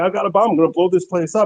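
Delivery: mock, high-pitched screaming man's voice.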